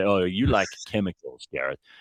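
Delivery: suspicious, shady, dodgy-sounding delivery. Repeating another speaker's line back to them: imitating George sounding dodgy. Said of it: "it really sounds dodgy when you say".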